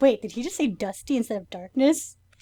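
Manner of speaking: usual speaking voice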